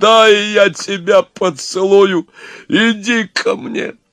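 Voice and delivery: very high, drawn-out, bellowing guard's roar. Narrator reads the guard's line to the elegant devil, roaring. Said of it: "заревел стражник".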